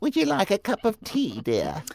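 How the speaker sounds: very high, swooping put-on old British lady voice. Introducing his co-host Sarah on the show as Auntie Sarah, old British voice. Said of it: "I figure it's like an old British thing".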